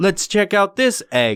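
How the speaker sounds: woman's halting, non-native broken English. Retelling what a toy-unwrapping video woman said: imitating a woman with broken English. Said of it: "she sounded as if she didn't know English".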